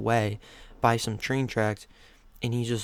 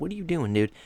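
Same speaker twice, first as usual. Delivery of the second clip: play-acted, high, shrill screaming yell; 5 semitones higher than usual. Retelling how a guy by the road yelled at the passing car: imitating someone screaming. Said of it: "He's screaming".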